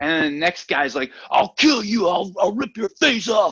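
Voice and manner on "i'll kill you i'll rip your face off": really aggressive, high-pitched, yappy voice. Retelling what the next guy said to start a fight, mock-aggressive threat. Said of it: "this really aggressive".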